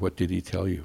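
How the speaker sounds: plain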